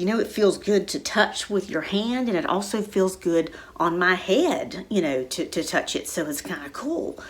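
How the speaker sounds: ordinary delivery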